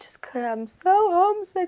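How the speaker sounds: mock hysterical sobbing like a child. Retelling a homesick camper's words: imitating hysterical crying. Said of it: "she was hysterical crying".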